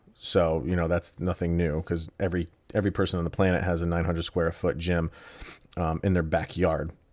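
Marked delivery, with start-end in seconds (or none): none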